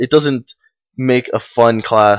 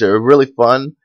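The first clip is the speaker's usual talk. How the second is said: usual speaking voice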